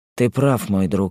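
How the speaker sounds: plain reading voice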